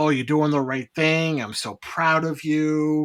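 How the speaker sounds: hammed-up, overacted put-on gushing tone. Retelling a scene of coaxing someone into lowering a gun: imitating hammed-up praise. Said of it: "really hamming up the".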